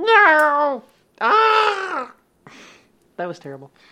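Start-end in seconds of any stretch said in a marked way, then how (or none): 0.0-2.1 very high, shrill, drawn-out pained yowl. After saying the yowl in the story needs to be performed, give a loud tiger yowl of pain. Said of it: "I think you need to do that yowl".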